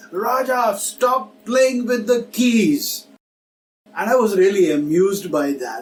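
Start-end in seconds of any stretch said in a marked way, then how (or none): 0.1-3.0 acted-out high shout, as if from another room. Retelling how a mother called out from the kitchen: imitating mother shouting. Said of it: "she shouted from there".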